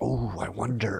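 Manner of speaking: plainly insincere, sarcastic mock wonder and surprise. Retelling opening the one Christmas Eve present: sarcastic fake surprise. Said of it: "Do you do it, like, sarcastically?".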